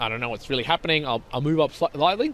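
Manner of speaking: ordinary talk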